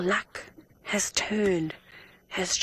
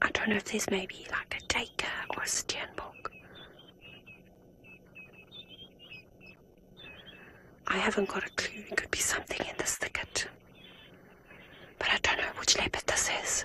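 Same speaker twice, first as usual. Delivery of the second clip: very high, hushed, soft whispering voice; 6 dB quieter than usual. Watching a leopard on a live safari broadcast, talking softly to viewers: whispering. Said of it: "This is my whispering voice".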